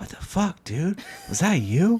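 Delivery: hushed stage whisper. Retelling how his wife leaned in during a movie: imitating a whisper. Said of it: "She leans in and whispers".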